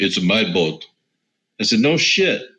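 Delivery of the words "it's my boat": put-on Russian accent. Retelling a man's answer about whose boat it is, in a Russian accent. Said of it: "He says in a Russian accent".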